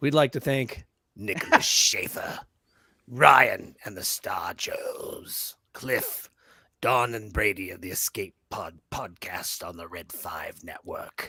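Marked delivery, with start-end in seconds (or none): 1.2-11.3 very low, sinister, evil emperor voice. A podcast host doing a shout-out segment in a Palpatine voice. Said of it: "So I'll do this in my best uh".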